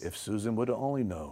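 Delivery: low, hushed, film-style movie voice. Pressed by another speaker to do a movie voice, the speaker tries one: movie voice. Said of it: "Movie voice".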